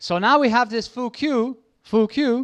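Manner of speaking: put-on very strong German accent. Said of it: "with a very strong German accent".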